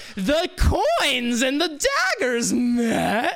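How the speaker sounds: high, slow, loud, drawn-out evil villain voice, enticing.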